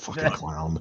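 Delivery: low, mumbled, muttered under the breath. Retelling what Sean Mooney said about a clown: imitating Sean Mooney muttering under his breath. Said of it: "what he said under his breath".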